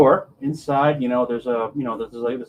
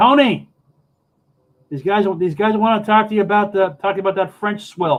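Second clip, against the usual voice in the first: loud calling out, higher and louder; 6 semitones higher, 4 dB louder than usual. Voicing a secretary who calls for someone: shouting over her shoulder. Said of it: "She shouts that over her shoulder".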